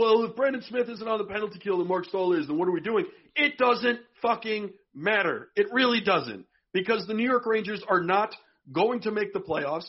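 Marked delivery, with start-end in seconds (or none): none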